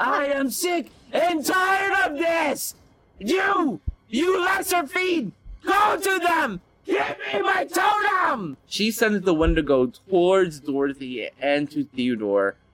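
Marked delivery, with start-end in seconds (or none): 0.0-8.6 very high, shrill, shouted roaring monster voice. Voicing the enemy in a tabletop game at the players' request: roaring character voice. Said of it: "can you do the voice?".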